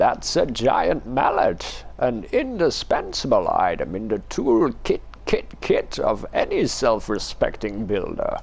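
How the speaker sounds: put-on comic old hermit voice, hoary old codger. A storyteller voices a hermit explaining the hammer to Nilus: hermit character voice. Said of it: "hairy hermit. / hoary, hairy hermit. / He's leading us on a wild goose chase. / You conniving old codger! / I haven't thought of a voice for this guy yet, but I'll just go with this one. I like this v".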